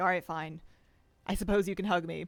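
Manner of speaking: put-on dog voice, feigning reluctance. Voicing a dog that plays hard to get about hugs: voicing a dog feigning reluctance. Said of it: "plays hard to get a little bit".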